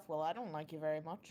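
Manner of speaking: grumbled aside, muttered under the breath. Voicing a character who grumbles about another: muttering under her breath. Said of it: "Ula mutters under her breath".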